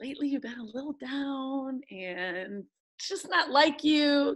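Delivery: sugary-sweet, gentle, slow delivery. Imitating a supportive person gently saying you've been down: imitating Jessica saying it sweetly. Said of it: "even if they say it real sweet like that".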